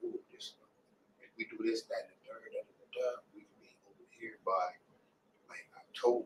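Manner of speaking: hushed, quick whispering.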